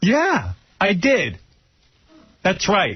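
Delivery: put-on defiant, angry tone, high and swooping. Retelling an answer to a partner's question: imitating own angry reply. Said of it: "Like, angry".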